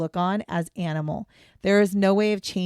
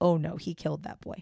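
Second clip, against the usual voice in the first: put-on proud tone, much quieter; 2 semitones lower, 6 dB quieter than usual. Quoting what Henry Lee Lucas said about a killing, mock-proud, imitating Henry Lee Lucas. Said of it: "he said it like that ... Like you're proud of it".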